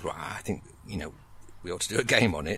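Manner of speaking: ordinary talk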